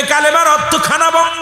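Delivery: high, harsh, barked-out delivery.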